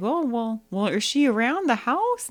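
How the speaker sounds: put-on old-timey drifter voice. Retelling a scene where Mister Teague asks the dad about Carol Ann: Mister Teague as old-timey drifter. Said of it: "You make Mister Teague sound like a old-timey drifter".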